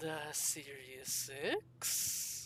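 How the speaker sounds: hushed, breathy, eerie and ominous spooky voice. Acting out the voice that answers back, in a spooky, ominous voice. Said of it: "a spooky, ominous voice back".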